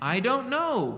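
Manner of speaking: sarcastic tone. Retelling the healed blind man's answer when asked where Jesus went, retelling a sarcastic reply. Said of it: "with the most sarcastic look I can ever imagine".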